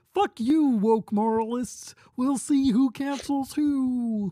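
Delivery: very high pitch with "who" dragged out. Trying an impression on a moment's notice: Kermit the Frog voice. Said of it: "when I just do Kermit the Frog here".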